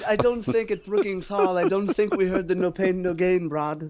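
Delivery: nose-in-the-air put-on accent. Talking to Brad about a state school versus Washington University: put-on snooty accent. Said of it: "I don't know what accent this is".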